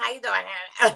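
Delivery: put-on high voice, as if on laughing gas. Showing how someone talked after each hit of laughing gas: imitating a voice high on laughing gas. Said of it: "he would start talking like this".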